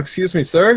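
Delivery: put-on strong, full Canadian accent. A player in a role-play walks up to a guard, full canadian accent. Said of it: "with all the restrictions of my Canadian accent coming out".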